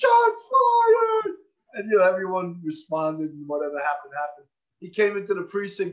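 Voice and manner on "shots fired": shrill, very high, very loud scream. Recounting a young cop heard on the radio, retelling a radio scream.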